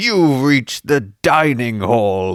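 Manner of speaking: loud, booming monster or dragon voice. Narrating a story, voicing the dragon as it speaks: booming dragon voice. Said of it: "the dragon's voice booms".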